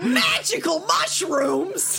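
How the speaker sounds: loud, grating put-on comic voice. Voicing a magical entity after being asked: Gilbert Gottfried voice. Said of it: "make him sound like Gilbert Gottfried".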